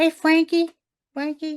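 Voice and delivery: very high-pitched, loud calling-out voice. Discussing an actress playing the bride, imitating the Bride's voice. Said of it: "her playing and then with the voice".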